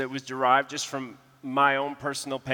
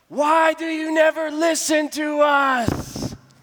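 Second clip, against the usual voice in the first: shrill, very high-pitched, loud shouting outburst; 14 semitones higher, 7 dB louder than usual. Retelling how a man in a silent room stood up; retelling a shout. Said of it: "stands up and shouts".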